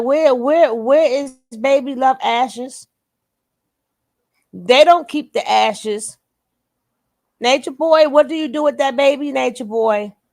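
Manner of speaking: very upset. Reacting to a video while speaking to nature boy: very upset. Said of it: "I'm very upset again".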